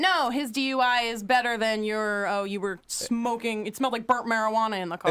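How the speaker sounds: ordinary talk, nothing marked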